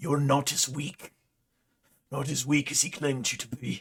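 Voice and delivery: low, frustrated growling mutter under the breath. A character mutters to himself after a question hangs; low frustrated muttering growl. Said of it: "he sort of growls low, ... mutters something to himself".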